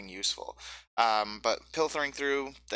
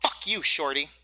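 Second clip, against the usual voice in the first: goblin creature character voice; 4 semitones higher, 4 dB louder than usual. Voicing a goblin insulting a player character: goblin voice. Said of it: "it says something to you in Goblin".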